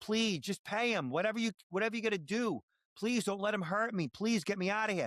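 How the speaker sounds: acted, frantic, begging, high-pitched desperate screaming. Describing a scam call, acting out the kidnapped daughter, retelling a screaming plea. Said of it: "literally screaming".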